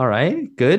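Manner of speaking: dry sarcastic tone. Answering a greeting before a discussion with the other guests: sarcastic. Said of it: "I'm not sure why that was so sarcastic".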